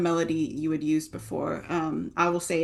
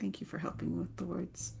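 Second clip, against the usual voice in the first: very quiet, hushed whisper; 12 dB quieter than usual. Voicing a character speaking to Farrelyn: whispering. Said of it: "and whisper".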